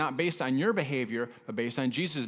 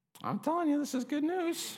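voice shoots up very high, pitched-up; 13 semitones higher than usual. Speaking to listeners about right believing, the voice going up high. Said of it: "my voice went up so high".

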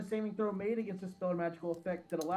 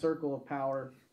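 ordinary talk, nothing marked

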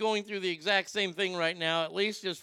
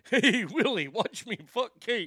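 pitched-up alien puppet voice; 5 semitones higher, 4 dB louder than usual. Talking about Willie and Kate, going into an ALF voice. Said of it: "I just go into automatic Alf voice".

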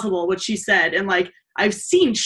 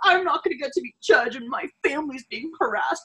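acted, whiny, blubbering, sobbing crying voice; 6 semitones higher, 4 dB quieter than usual. Mocking a would-be judge's complaints, imitating someone crying. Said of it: "he's like crying for him".

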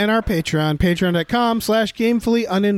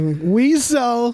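put-on goofy drawl, higher pitched; 5 semitones higher than usual. Showing a best effort at imitating Pauly Shore. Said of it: "that's my best Pauly Shore".

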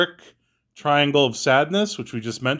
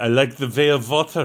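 put-on German accent with v sound. Listing the Best Picture nominees, joking: Sprockets German voice. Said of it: "like sprockets".

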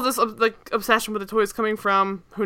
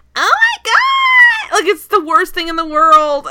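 put-on intense, high, loud little-kid voice, "god" drawn out; 8 semitones higher, 5 dB louder than usual. Complaining about her upsetting kid voice, imitating her kid voice. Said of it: "she makes this kid voice where she's just like".

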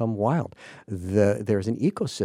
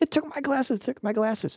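put-on very high, screeching, shrieking scream. Speaker retells a film character's reaction, imitating a screaming man. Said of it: "he starts screaming".

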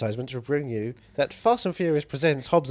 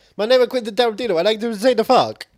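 very high, loud, put-on Italian accent; 10 semitones higher, 7 dB louder than usual. Joking about a director's swearing: put-on Italian accent. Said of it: "That's my Italian impression".

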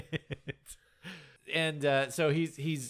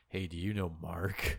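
low, soft, creepy stranger voice. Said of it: "creepy asshole came up and was like".

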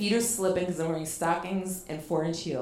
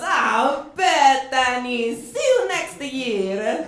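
loud, high, very slow belly-laughing speech; 7 semitones higher, 7 dB louder than usual. Telling a story, the speaker acts out a man's reply, retelling a belly laugh. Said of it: "Giorgio Armani just belly laughs at me and goes".

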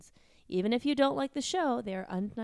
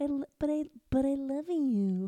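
very slow, halting, stumbling at the start; 3 semitones higher than usual. Doing a voice for the others: Woody Allen voice. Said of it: "that Woody Allen impression".

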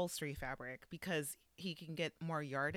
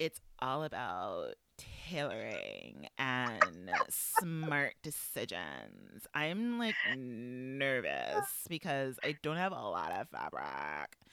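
put-on vocal fry voice, lower; 6 semitones lower than usual. Retelling what a knitwear designer said about his dress: Michael Drummond impression with vocal fry. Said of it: "Sorry for the vocal fry, but that's Michael Drummond's fault".

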